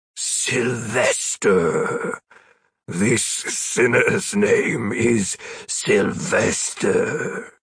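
rough, low, deep gravelly demon growl. A male demon tells the others the sinner's name, deep, gravelly voice. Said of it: "speaking in a deep, gravelly voice".

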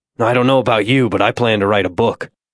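ordinary delivery

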